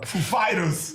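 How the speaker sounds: put-on hesitant showman voice. Showing how Christopher Walken says the band name: Christopher Walken voice. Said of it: "the way Christopher Walken says it".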